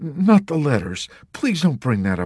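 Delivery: pleading, imploring, begging tone. The chaplain, asked about the letters, pleading. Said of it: "the chaplain pleaded".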